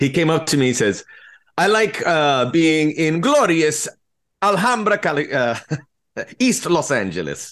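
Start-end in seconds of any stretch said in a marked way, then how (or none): 1.6-7.5 horrible put-on non-native English accent, slower pace. Speaker makes up a line from Giorgio, who learns English from them, Giorgio's horrible accent. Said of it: "I'm sorry about the horrible accent".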